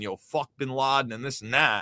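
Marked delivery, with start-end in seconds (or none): none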